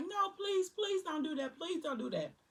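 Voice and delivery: shrill, very high pleading scream. Retelling a fight, quoting a woman on the porch: imitating Alani screaming. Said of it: "Alani on the porch screaming like".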